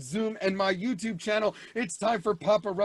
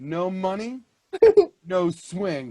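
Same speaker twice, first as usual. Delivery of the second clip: mock cool, unbothered, chilling, raised and swooping; 7 dB louder than usual. Retelling her reply to him, imitating a calm delivery. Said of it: "she said it so calmly too".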